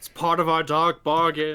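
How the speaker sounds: haunting, spooky, spectral ghostly voice. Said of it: "I don't know why I'm talking like a ghost".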